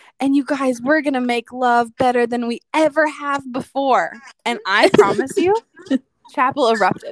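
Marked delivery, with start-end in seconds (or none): 0.2-4.1 loud mock excitement, sudden outburst. Retelling how a woman addressed everyone at chapel, imitating her loud, excited voice. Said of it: "in a loud, excited voice".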